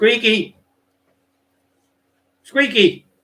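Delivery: shrill, very high, very loud calling out. Speaker getting the dog to show his ball trick, shouting at the dog. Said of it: "You can hear me shouting him".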